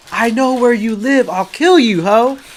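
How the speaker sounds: shrill, play-acted scream, yelled out. Telling about ordering food, the speaker imitates a man screaming a threat on his way out. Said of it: "he just screams like".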